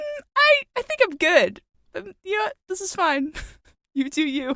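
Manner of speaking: high-pitched polite tone. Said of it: "I'm like".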